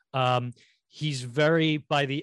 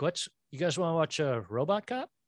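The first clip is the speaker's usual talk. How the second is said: put-on elderly person voice; 4 semitones higher than usual. Retelling how elderly relatives ask to watch a movie: imitating an elderly relative. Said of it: "when your elderly relatives is like".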